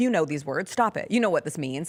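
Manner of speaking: plain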